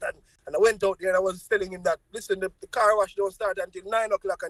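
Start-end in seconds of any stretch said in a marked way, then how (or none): none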